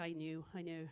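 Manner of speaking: put-on very low, quiet, hushed Scottish accent. Teasing an Irish person, imitating their grandmother, in a Scottish accent. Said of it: "with a Scottish accent".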